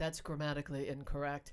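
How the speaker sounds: low, flat correcting tone.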